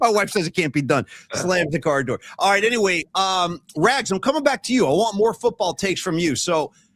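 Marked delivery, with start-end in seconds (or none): 0.0-1.1 muttered under the breath. Recounting Piven spotting a woman getting out of her car next door: acting out Piven muttering. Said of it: "Piven like mutters under his breath".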